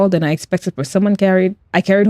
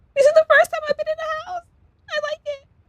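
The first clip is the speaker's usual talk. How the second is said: wobbly, very high, cute, quick voice; 9 dB quieter than usual. Voicing Doka, who has just begun speaking, in a wobbly high cute Doka voice. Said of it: "Wobbly, high pitched, and very cute".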